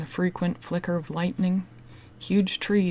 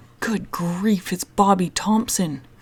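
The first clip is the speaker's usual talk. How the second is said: loud, horrified cry out; 6 dB louder than usual. A narrator reads a boy's line on hearing a distant call, crying out in horror. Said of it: "Chet cried out in horror".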